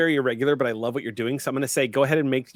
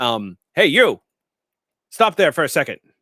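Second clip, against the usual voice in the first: put-on intercom-style voice; 8 dB louder than usual. Narrating a game, a stormtrooper calls out to Daro: Stormtrooper intercom voice. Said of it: "calls out to him in that sort of intercommy styled voice behind the bucket".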